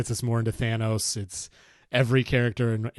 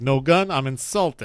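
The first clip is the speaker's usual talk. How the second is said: loud, raised gangster or mob boss voice; 3 semitones higher, 5 dB louder than usual. Quoting a favorite line from Batman Begins: gangstery Carmine Falcone voice. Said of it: "he says it in such a gangstery way".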